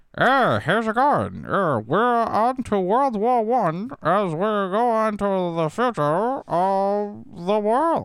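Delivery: put-on very high, slow old-time radio announcer, of stretched. Speaker imitates the radio voice of the time, old-time radio announcer voice. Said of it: "the radio voice of the time was".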